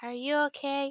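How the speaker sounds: voice dropped a touch, soft and quiet. Retelling how he answers her offer of a drink, in a lowered voice. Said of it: "he just kind of lowers his voice a little bit".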